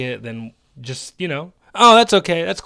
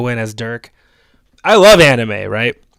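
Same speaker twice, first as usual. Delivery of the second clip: normal talking voice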